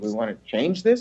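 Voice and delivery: mildly sarcastic, needling tone. Retelling asking one's own body about changing weight: retelling own sarcastic question. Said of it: "a little sarcastically".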